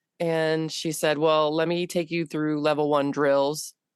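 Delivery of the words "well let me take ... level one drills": usual speaking voice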